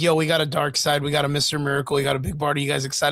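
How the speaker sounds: ordinary delivery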